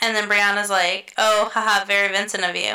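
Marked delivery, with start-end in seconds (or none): 1.2-2.8 teasing, playful, light joking tone. Retelling what a woman said about a spilled drink: imitating Brianna's joking tone. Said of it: "In a very joking tone".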